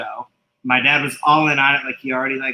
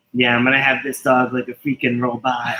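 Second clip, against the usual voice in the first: normal talking voice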